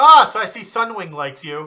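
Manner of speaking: very loud, high-pitched shout projected across a distance. Narrating a scene where Salan calls over to Oglin, Salan shouting across. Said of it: "he shouts over at Oglin".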